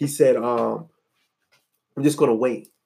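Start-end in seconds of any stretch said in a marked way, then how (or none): 2.0-2.6 calm put-on conversational menace at a lower pitch. Retelling a movie scene where Denzel calmly threatens a man: imitating Denzel's calm threat. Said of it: "Just very calm, though".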